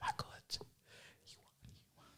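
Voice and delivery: quiet, breathy, barely voiced whisper. Retelling how the fiance came upstairs with the news: imitating a whisper. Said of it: "whispering and pointing at his phone".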